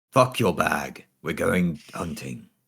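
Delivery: gravelly character voice. In an actual-play game, a character tells a companion she's coming along; gravelly character voice. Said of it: "[name] / but it's so much gravelier weed".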